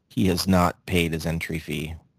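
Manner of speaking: narration-style storybook reading voice. Mid-story about a fantasy league, the speaker switches into a narrator voice. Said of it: "in my narrator voice".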